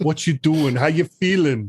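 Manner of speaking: put-on New York accent. Greeting the hosts on arrival: bad new york beach accent. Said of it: "bad New York beach accent".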